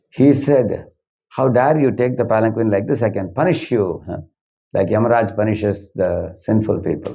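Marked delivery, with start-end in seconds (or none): none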